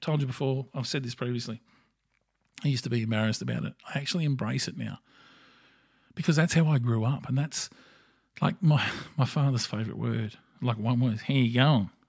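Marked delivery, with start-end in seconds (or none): 11.2-11.9 mock slurred words run together, louder. Imitating a father's favourite greeting: several words run into one. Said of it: "he literally turns several words into one".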